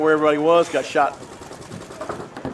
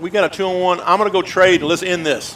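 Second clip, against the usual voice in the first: usual speaking voice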